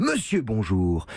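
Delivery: pitch drop on bonjour. Showing how a greeting said second sounds, voice dropping on 'bonjour'. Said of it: "quand on dit bonjour en second, on baisse toujours la voix".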